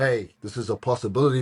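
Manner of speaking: plain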